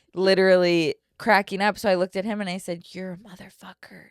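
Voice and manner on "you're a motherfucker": whisper, very quiet and barely audible. Retelling what was said to a grandfather: retelling own whisper. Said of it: "And I whispered it to him".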